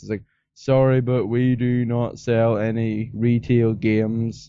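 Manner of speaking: very slow, flat, dead-level monotone. Retelling the till clerk's reply at the shop, in a monotone voice. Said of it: "He said in like the most monotone voice".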